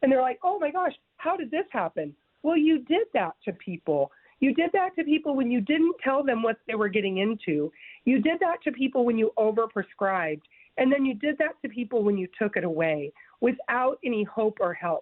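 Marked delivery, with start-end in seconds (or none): 0.4-2.1 mock surprise jumping high on oh. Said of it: "they're acting all surprised".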